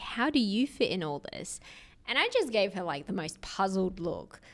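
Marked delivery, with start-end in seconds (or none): 0.0-1.6 slow, deliberate, patronizing, condescending tone. Retelling a question from an elderly lady at a conference: imitating a condescending slow tone. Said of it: "in a very condescending, slow tone was like".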